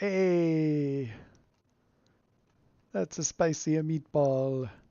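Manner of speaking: very slow, drawn-out put-on stage Italian accent. Reading a sign on the door aloud: put-on Italian accent. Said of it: "I can use that accent because I'm Italian".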